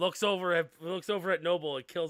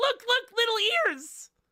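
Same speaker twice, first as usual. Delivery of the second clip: put-on very high, loud little-girl voice; 5 dB louder than usual. Voicing a little half-elf girl showing her ears: voicing a little half-elf girl. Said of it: "She goes".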